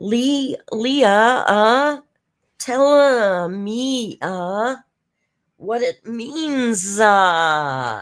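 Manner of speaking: high, very slow, halting, long uh after each word. Imitating someone who puts "uh" after every word: imitating someone adding "uh" to every word. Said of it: "I even wrote it phonetically".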